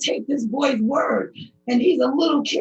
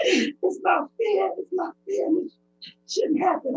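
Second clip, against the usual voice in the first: emotional, overcome voice, pitched up; 5 semitones higher, 3 dB quieter than usual. Telling of being beaten by the police: emotional. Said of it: "Sorry for being emotional".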